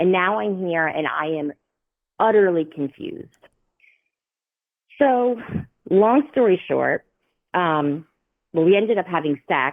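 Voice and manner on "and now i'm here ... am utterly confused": usual speaking voice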